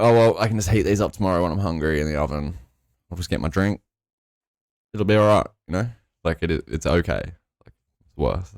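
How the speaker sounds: normal talking voice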